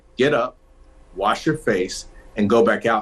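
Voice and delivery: strict, stern, firm, no-nonsense, repeated words. Retelling how her mother repeated an order to her, retelling a stern repeat. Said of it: "she repeats it more sternly".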